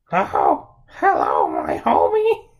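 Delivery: very deep, loud, swooping cartoon character voice. In a chat about impressions, Marge Simpson impression. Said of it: "if I could do a Marge Simpson impression".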